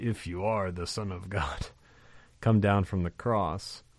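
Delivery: devil character voice. Speaker recalling a film clip played for students, imitating the film's devil. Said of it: "the actor who played the devil in that".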